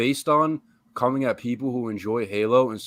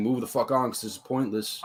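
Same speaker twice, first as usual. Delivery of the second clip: ordinary talk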